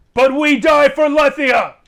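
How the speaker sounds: very loud, shrill, full-throated battle cry. Voicing the archers on the wall answering: yelling battle cry. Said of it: "every archer on the wall yells".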